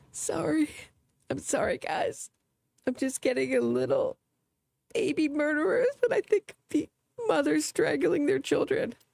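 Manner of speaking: high-pitched fake teary voice, pitched way up. Speaker sarcastically apologizes to the guys listening, mock tearing up. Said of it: "Just tear up a bit".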